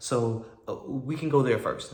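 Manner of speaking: plain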